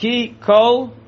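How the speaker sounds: ki, then a clear pause, then kol. Explaining the pauses needed in a pasuk: pause between ki and kol. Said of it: "you have to pause between ki and kol".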